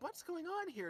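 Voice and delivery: shocked, breathless, very high-pitched gasp. Reading a fan story aloud, the princess asks what he means: gasping. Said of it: "she gasped".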